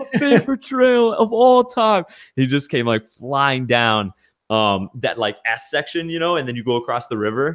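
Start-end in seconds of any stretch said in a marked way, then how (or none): 0.0-2.0 excited yell, pitched higher. Retelling how a patron yelled riding down the trail: imitating Jody yelling. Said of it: "I just heard him yelling".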